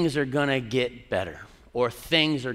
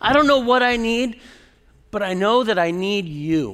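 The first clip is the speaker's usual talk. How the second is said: acted screaming, slower; 9 semitones higher, 8 dB louder than usual. Recounting crying out to God, the speaker relives the moment: retelling a scream. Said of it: "And then I started screaming some more".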